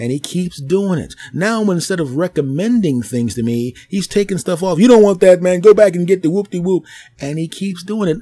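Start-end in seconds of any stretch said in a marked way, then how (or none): 4.8-6.8 very loud, bossy, pushy tone. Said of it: "he's getting a little pushy".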